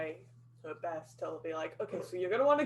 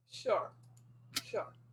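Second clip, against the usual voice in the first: heavily sarcastic, dripping with sarcasm; 3 semitones higher, 4 dB quieter than usual. Answering a claim that the group looks inconspicuous: dripping with sarcasm. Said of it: "that is dripping with sarcasm".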